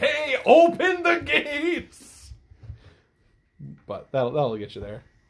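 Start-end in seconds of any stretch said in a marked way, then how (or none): 0.0-2.3 very loud shouted call, very high, very slow. The game master shows how a character might call out to the gate, yelling. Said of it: "It'd be like yelling like".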